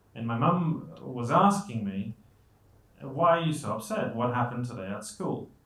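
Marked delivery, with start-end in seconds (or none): none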